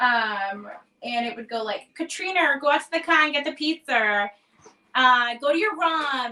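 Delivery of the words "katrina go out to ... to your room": Rhode Island-accented speech. The speaker demonstrates calling to their sister Katrina: little Rhode Island accent. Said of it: "I'll do a little Rhode Island accent".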